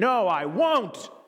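forceful, intense, defiant, dead-serious delivery. Acting out someone urged to repeat their refusal, acting out saying it intensely. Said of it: "Say it with some more intensity".

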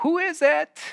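put-on grandmother voice, very high pitched. Students behind a door answer a knock, in an old grandmother voice. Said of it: "in their best old grandmother voices".

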